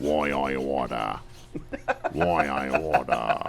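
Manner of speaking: quiet deep low-pitched voice. Asked to give an impression while the listener's eyes are closed, deep-voiced James Cagney impression. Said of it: "He's got a real deep voice".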